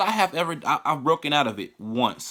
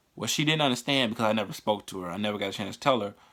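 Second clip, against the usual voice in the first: plain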